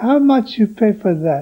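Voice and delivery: very tiny, small little voice. Arguing outside the coach, the speaker retells a girl speaking up, in Maria Antoinetta Pontoni's tiny voice. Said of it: "very tiny voice".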